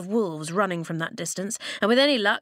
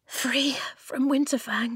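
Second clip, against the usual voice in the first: panting, breathless disbelief, higher pitch; 4 semitones higher than usual. A girl escapes into a cliff opening and leans on the wall, panting in disbelief. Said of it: "she panted in disbelief".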